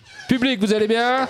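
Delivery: high-pitched, called out loudly.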